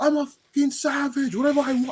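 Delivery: put-on all-out yelling, squeaked very high. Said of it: "he just starts screaming".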